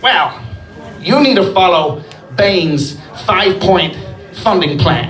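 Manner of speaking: usual speaking voice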